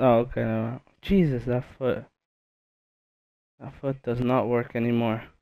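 soft, very low-volume mumbling, barely audible. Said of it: "because I'm speaking way too low".

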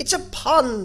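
very loud, high-pitched, offended tone. Reading the King's remark to the silent court, offended tone. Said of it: "the King added in an offended tone".

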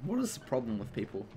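soft voice breaking with a voice crack. Complaining about people who FaceTime instead of texting, voice cracking. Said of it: "That was a weird voice crack".

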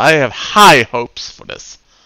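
slow, drawn-out sarcastic drawl. Gamer on stream starting a mission they don't rate; sarcastic. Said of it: "I'm being sarcastic".

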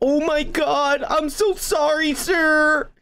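put-on frightened voice, high and very slow. Retelling a street run-in, quoting the pedestrian he yelled at, imitating a scared apology. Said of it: "he was scared as fuck".

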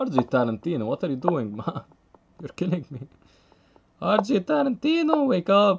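high voice, cracking and breaking. Urging a chess player who is low on time, voice cracking. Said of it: "My voice is cracking".

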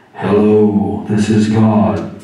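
very loud, thundering, booming, proclaiming voice. A speaker asks what God's voice sounds like and demonstrates; booming God voice. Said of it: "Is it the booming".

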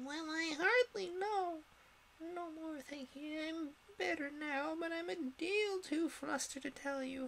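feeble squeak, very high-pitched. Reading a story aloud, Bill answers the others' questions, in a feeble, squeaking voice. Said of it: "a feeble, squeaking voice".

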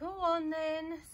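very loud, high-pitched sigh. Giving in when asked again to hear a tune, sighing. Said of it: "sighed Mrs".

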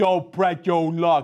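bad, put-on British accent. Mocking the actor's line in Prince of Persia: Jake Gyllenhaal's bad British accent. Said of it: "with the worst British dialect of all time".

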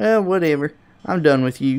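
sounding Southern. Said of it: "I don't know why I sounded southern".

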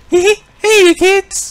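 squeaky, very high, loud cartoon voice. Try a voice you used to do better, calling to kids in a Mickey Mouse impression. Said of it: "being able to do a Mickey Mouse impression".

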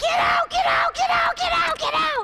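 screaming, pitched very high, repeated. Recounting running to the hotel room door at night, retelling own screaming. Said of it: "and I just start screaming".

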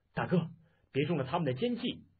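usual speaking voice

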